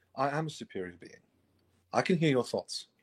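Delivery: approximate, put-on educated English accent. Answering the other character's insult, in a Neil Gaiman impression. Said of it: "I'm just doing an approximate like English accent".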